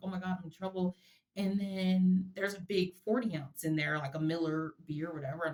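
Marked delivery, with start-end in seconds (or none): 0.0-1.0 mock-scared, put-on afraid voice. Speaker recalls his father picking him up as a child, acting out own childhood fear. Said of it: "I'm like all afraid".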